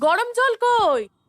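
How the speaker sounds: shouting. In a drama, someone who slipped and fell calls for hot water: yelling. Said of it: "একটুতেই এত চিৎকার করিস?".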